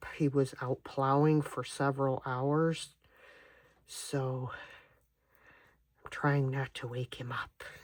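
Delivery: speaking softly in a low, hushed voice. Working on clay molds while their son naps in the next room, talking low. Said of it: "I'm talking low because my son is in the next room".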